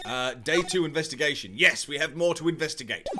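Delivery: normal talking voice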